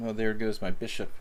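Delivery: ordinary delivery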